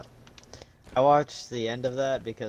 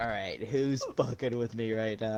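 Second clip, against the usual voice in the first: usual speaking voice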